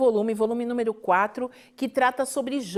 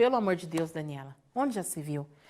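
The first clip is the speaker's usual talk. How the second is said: play-acted very low, fed-up, exasperated mother voice; 7 semitones lower, 7 dB quieter than usual. Retelling her mother's reply to her cries for help, imitating exasperated mother. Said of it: "a minha mãe não tinha entrado na pilha".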